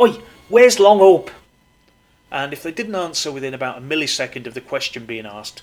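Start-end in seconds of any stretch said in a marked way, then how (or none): 0.0-1.3 very loud, high hollering shout. Retelling how the driver shouted at people in the street: imitating someone shouting. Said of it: "screeching up next to people in the street and shouting".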